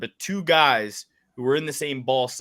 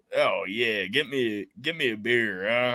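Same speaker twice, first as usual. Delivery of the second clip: slow, drawling, put-on Southern twang; 3 dB quieter than usual. Saying her New Jersey family has regular voices, then doing a mock Southern twang. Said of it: "We don't have no".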